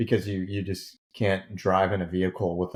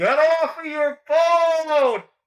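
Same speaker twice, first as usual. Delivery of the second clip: high-pitched, shrill, obnoxiously loud, all-out scream; 7 dB louder than usual. Retelling yelling through the window crack at a guy on his phone, retelling a yell. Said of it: "and I cut my hands and and I yell".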